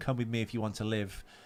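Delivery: ordinary delivery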